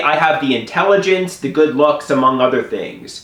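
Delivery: ordinary talk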